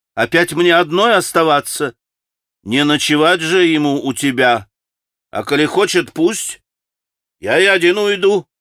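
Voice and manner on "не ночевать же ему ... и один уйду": sarcastic, needling, caustic tone. Narrator voicing a man replying to a distressed woman, with a caustic joke. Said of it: "язвительно подшутил Ракитин".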